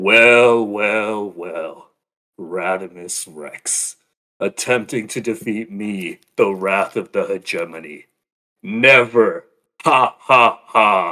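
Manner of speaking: booming, very loud fake tough-guy voice, dragged out. A character confronting radimus rex, trying a put-on tough voice. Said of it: "tries to put on a tough voice".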